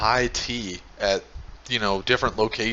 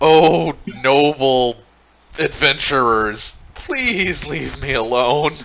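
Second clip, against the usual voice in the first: loud, slow, begging goblin chieftain voice; 4 semitones higher, 8 dB louder than usual. Voicing a cornered clan leader begging the adventurers to leave. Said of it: "he's like".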